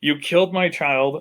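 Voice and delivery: furious, enraged, accusing in-character scream. Voicing a character who accuses the players: screaming in character. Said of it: "Mister Corbett screams".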